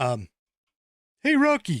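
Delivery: goofy animal cartoon voice. Mid-segment, the speaker suddenly greets Rocky in a Bullwinkle impression. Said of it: "that was my Bullwinkle impression".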